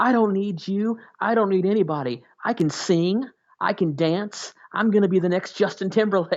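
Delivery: mock high, angry, boastful screaming rant. Retelling how he screamed at everyone in the van: imitating someone screaming. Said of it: "at one point he started screaming".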